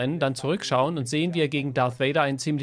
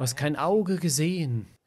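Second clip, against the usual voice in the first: normal talking voice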